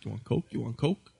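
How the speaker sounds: low, hushed, sidelong, conspiratorial-sounding hush. Retelling a street stranger offering cocaine, imitating a low-toned voice. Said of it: "the guy in like the low tone, he's like".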